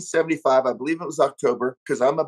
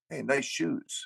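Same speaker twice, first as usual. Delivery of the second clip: hushed, very quiet whisper; 11 dB quieter than usual. Retelling a shoe compliment made during the show: imitating Phil whispering. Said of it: "He'd whisper to me".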